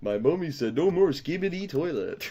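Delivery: high hamster voice, as in hamster videos. Imitating one of those hamster videos, unsure how to do it: hamster-video voice. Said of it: "one of those like hamster videos where it's like, uh, I don't even know how to do the voice".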